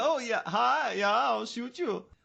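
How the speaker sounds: put-on Swedish accent, high and slow. Acting out walking into a place and threatening people: put-on swedish accent. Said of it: "That's why you wanna have this accent".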